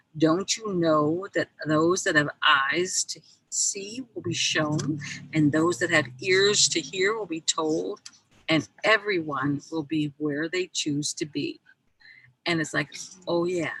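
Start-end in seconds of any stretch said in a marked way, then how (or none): none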